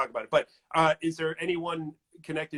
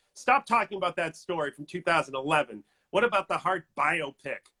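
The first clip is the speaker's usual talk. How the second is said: cross, irritated, complaining angry voice, acted out. Reading aloud someone's comment that came in during the talk, in a mock-angry voice. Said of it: "that's my angry voice".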